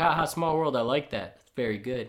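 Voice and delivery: ordinary talk, nothing marked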